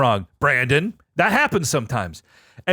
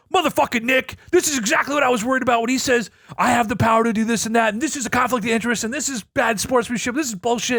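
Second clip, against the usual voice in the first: put-on high, frantic, panicked freaking-out rant; 6 semitones higher than usual. Retelling a voice memo sent while freaking out: retelling own freaking out. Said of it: "fucking already freaking out".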